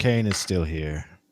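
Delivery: mournful, downcast, sad, sorrowful delivery. During a game, a player reports someone is still here, trying to sound sad. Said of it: "sad about Kane still being here".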